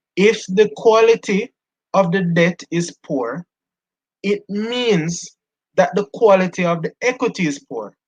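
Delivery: very slow, high, deliberate, word-by-word delivery. After announcing it, the speaker says the next point very slowly. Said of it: "I'm going to say this very slowly".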